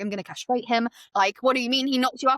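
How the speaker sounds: furious outburst, fury boiling over all at once. Retelling a book scene where a mother hears shocking news: imitating Denny losing her mind. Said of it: "Denny loses her mind".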